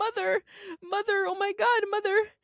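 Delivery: very high, drawn-out hysterical sobbing and wailing. Describing a woman questioning her spiritual mother: imitating hysterical crying. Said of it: "is hysterical crying and is like".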